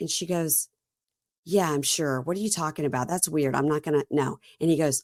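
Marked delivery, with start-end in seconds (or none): none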